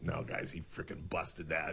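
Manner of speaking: very quiet, hushed mutter under the breath. Retelling own comment on a video, imitating muttering under breath. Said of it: "under my breath".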